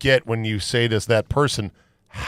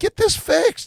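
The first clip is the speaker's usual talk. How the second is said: very high-pitched, insistent, exasperated delivery. Retelling a studio visit about a broken mic mount: imitating own screaming. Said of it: "I'm screaming at 'em".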